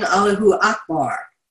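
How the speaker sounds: ordinary talk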